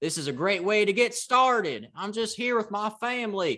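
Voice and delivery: put-on Southern drawl. Act out a man from Massachusetts on the mic to LSU fans, imitating a Southern drawl. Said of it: "he dropped into a Southern drawl".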